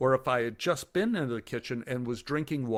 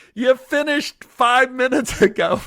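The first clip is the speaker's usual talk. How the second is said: shrill, very loud, very high yell; 12 semitones higher, 12 dB louder than usual. Retelling what the wife yelled from the next room: imitating Annie yelling. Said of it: "She just yelled".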